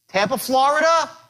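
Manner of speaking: rising upward lift at the end of Florida. Speaker demonstrating a cold-call opening to listeners, rising pitch at the end. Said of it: "When you raise your voice up like that".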